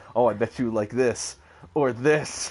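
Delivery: grunted words. Retelling a game scene where she grunts at Cloud: imitating her grunting. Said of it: "you hear her grunting, going".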